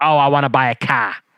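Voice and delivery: put-on strong, heavy Chicago accent. Imitating how the characters kept saying they wanted a car: imitating Kenan and Kel's thick Chicago accent. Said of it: "the accent".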